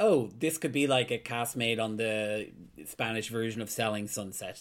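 ordinary talk

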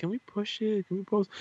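high, soft pleading tone.

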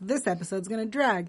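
normal talking voice

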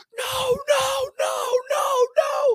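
very high, very slow, drawn-out screaming. Recounting yelling at Will during a great return, retelling own screaming. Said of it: "I'm screaming".

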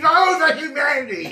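scream of a frog at death. Narrating a missed swing that kills a nearby frog, voicing it: dying frog scream. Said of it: "And he screams".

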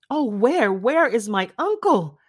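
crying out, very slow and drawn out. Elizabeth finishes reading a letter and darts from her seat; cried out. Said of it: "cried Elizabeth".

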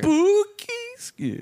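very high, slow, drawn-out "spooky scary" with "spooky" stressed.

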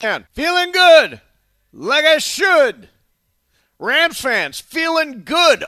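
high, loud, slow, drawn-out celebratory crowing call.

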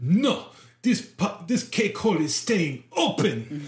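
put-on terrible French accent. Retelling a scene, the speaker voices Frenchie's comeback in a bad French accent. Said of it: "my terrible Australian and French accent".

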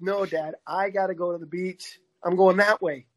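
dog character voice. Telling how his dog refuses other walking routes, voicing his dog. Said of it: "he's like".

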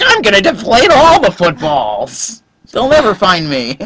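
high, super snivelly little villain voice. Playing the bad guy version of Tom Brady when he gets home, in a snivelly bad-guy Tom Brady voice. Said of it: "he is like super snivelly".

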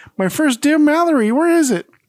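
very high, super excited, bursting with thrill. Speaker retells the scene where Mallory runs to the table, acting super excited. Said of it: "super excited".

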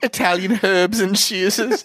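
British pronunciation of herbs. Retelling a British father ordering bread at Subway: imitating a British pronunciation of herbs. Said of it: "he was pronouncing herbs so fucking Britishly".

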